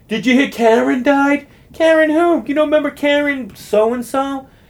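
imitated yelling. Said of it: "yelling across the bar to each other".

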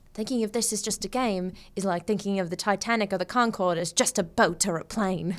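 put-on low, extra-British accent. Speaker quotes Quinn from Shut Up and Sit Down, British-accent Quinn impression. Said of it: "I have to do it more British".

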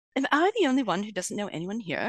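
imitated, put-on British accent. Quoting a late friend's favourite line, imitating Julie Taraschuk in a British accent. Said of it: "she said it in a British accent".

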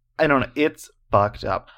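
ordinary talk, nothing marked

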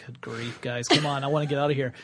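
ordinary talk

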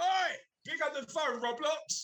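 very high-pitched yelling. Showing what a recorded ringtone of shouting would sound like: put-on shouting at someone. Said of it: "I'll record me just shouting at you".

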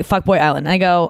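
normal talking voice

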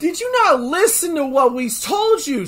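put-on screaming. Retelling screaming at a character while watching: imitating screaming. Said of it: "I was screaming at Goku".

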